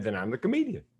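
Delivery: ordinary delivery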